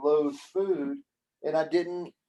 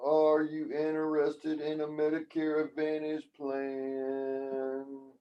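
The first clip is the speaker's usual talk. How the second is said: flat, unenthusiastic voice, quieter; 4 dB quieter than usual. Demonstrating how not to sound on phone calls; flat, unenthusiastic phone caller. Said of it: "You can't be like".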